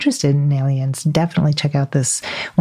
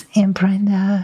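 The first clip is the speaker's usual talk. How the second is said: put-on sleepy child voice, higher pitch; 5 semitones higher than usual. Retelling a small child waking the speaker at night, imitating a sleepy child. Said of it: "saying in this sleepy voice".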